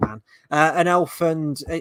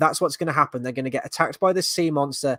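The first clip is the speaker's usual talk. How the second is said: ordinary talk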